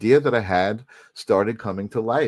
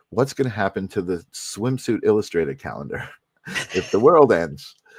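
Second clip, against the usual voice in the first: heavily sarcastic tone. Recounting what they once said to the girl they were dating; retelling a sarcastic question. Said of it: "very sarcastically".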